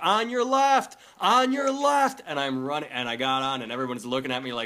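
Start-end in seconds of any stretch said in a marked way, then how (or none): 0.0-2.2 very high, stretched-out, drawn-out yell. Retelling running through an airport to a final boarding call, retelling a yell. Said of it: "i'm yelling at".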